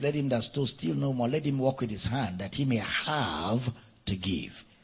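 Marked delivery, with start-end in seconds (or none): none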